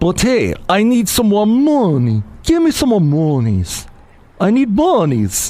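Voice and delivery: made-up caricature voice, high, swooping, sing-song. After a news item, speaker slips into an impression of someone unknown. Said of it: "I don't know who I was doing an impression of".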